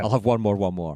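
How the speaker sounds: plain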